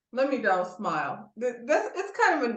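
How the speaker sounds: laughing while trying not to laugh.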